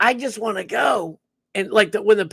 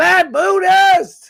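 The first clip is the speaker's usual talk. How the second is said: loud screaming yell, higher and louder; 9 semitones higher, 8 dB louder than usual. Reading out a viewer's name on a stream: screaming loudly. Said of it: "I know I'm screaming bloody murder".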